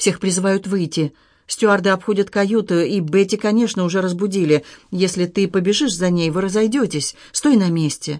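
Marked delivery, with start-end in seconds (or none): none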